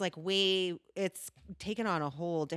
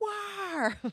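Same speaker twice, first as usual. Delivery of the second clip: mock fan shout, pitched way up high. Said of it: "run around shouting".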